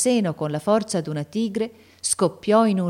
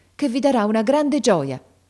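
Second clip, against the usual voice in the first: increasingly agitated, more and more flustered delivery; 3 semitones higher, 3 dB louder than usual. Reading a lady breaking good news to a sick woman, increasingly agitated. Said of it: "sempre più agitata".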